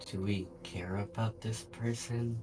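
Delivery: slow, hushed half-whisper. Voicing a character asking the group about the chained person: half-whispering. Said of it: "Glacial will kind of whisper".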